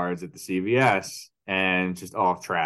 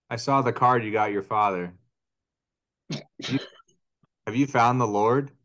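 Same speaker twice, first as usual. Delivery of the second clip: grave, earnest, dead serious voice; 3 semitones higher than usual. Retelling a worried mother's question about a card: imitating mom, dead serious. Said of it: "Dead serious".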